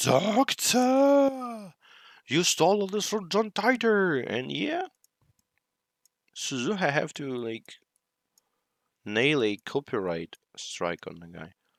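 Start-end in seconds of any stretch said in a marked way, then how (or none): 0.0-4.2 screaming outburst, very high-pitched. Retelling a scene where Okarin confronts the doctor: imitating Okarin screaming. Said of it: "Ocarine starts screaming".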